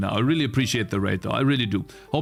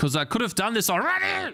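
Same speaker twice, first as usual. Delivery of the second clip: exasperated, angry outburst, high and rising in pitch; 10 semitones higher than usual. Complaining that work interrupted a plan: really mad. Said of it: "I'm really mad".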